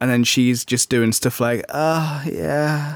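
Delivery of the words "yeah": imitated sultry female voice. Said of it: "Sorry for anybody having their breakfast still".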